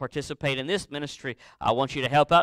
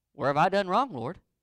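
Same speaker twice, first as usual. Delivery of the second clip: put-on sarcastic tone, pitched up; 5 semitones higher than usual. Acting out a listener's reply to god: imitating a sarcastic reply. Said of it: "That's sarcasm, by the way".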